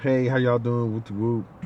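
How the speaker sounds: normal talking voice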